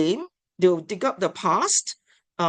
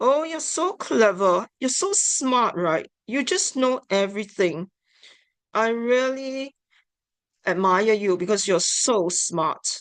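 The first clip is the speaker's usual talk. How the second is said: mocking, belittling sarcastic tone; 3 semitones higher than usual. Teaching about mismatched tone, the speaker demonstrates a sarcastic put-down tone. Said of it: "a sarcastic tone when you put down".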